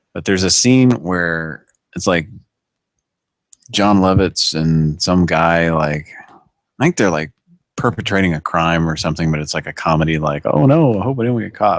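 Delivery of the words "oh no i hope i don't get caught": wishy-washy, half-committed hedging, pitch slightly raised. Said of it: "John Lovitz is real wishy-washy about it".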